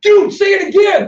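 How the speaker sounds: loud, high-pitched, stretched-out scream. Retelling how he screamed at the other man to repeat a statement, reenacting his own scream. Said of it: "And I started screaming".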